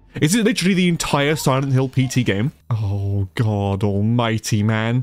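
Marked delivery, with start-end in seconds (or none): none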